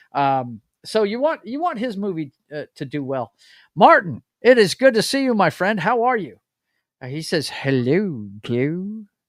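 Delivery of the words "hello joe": low, droopy cartoon basset hound voice. Reading out a chat greeting from Martin: Droopy Dog voice. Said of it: "He's talking like Droopy Dog again".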